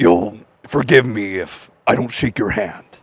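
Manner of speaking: very low, soft, hushed crime-boss voice. Quote Kingpin's little joke at the end of the exchange, in a good Kingpin impression. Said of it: "That was actually a good impression".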